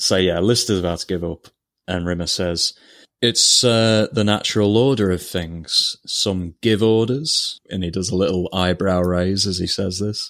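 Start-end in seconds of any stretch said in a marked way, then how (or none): 3.2-7.6 evil, lordly, menacing tiger villain voice. Retelling a scene, the speaker quotes Rimmer speaking as Lister gives up: Shere Khan-like voice. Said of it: "He says it very much like Shere Khan".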